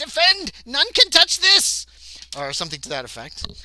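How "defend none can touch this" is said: very high, loud creature screech. Narrating a fight, voicing the creature with the book as it backs away: shrieking creature. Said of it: "It's shrieks out".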